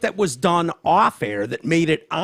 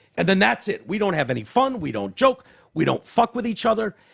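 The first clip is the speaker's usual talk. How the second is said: ordinary talk, nothing marked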